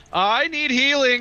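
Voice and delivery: piercing very high top-of-lungs shriek. Calling out in character after taking damage: screaming at the top of lungs. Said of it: "I'm going to scream at the top of my lungs".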